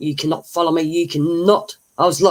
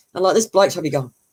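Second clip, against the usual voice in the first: ordinary delivery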